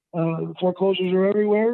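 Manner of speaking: ordinary talk, nothing marked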